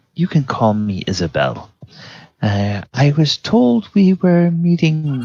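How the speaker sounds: careful, guarded voice. Game master voicing Isabel greeting the party in Thieves' Cant, quiet Isabel voice. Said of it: "she speaks rather quietly".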